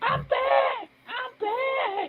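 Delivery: put-on high-pitched girly voice. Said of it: "like he told us in his girlish voice".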